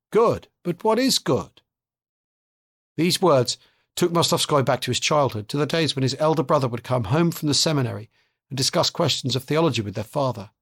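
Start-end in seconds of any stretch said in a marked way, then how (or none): 0.1-1.6 sing-song voice lilting up and down. Reading a novel aloud, a strange man asks a question: sing-song voice. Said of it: "said in his sing-song voice".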